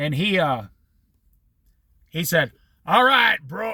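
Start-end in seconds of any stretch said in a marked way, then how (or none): 2.8-3.7 put-on voice of a heavy cigarette smoker. Retelling a hippie's reply to a job offer: imitating a smoker's voice. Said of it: "He talked like this 'cause he smoked cigarettes".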